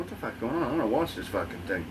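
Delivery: ordinary delivery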